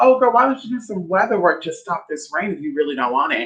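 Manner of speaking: heavily sarcastic, mocking, biting tone. Retelling a phone call, imitating a woman's sarcastic tone. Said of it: "being very sarcastic".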